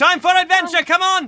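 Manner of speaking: yelling character voice. Voicing a character waking everyone in the hangar: Takumi yelling. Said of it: "yelling around".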